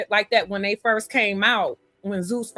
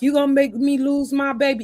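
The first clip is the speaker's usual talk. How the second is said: mock yelling and crying, pitched higher; 5 semitones higher, 3 dB louder than usual. Retelling how a pregnant woman got up there, imitating someone yelling and crying. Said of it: "she's yelling and she's crying".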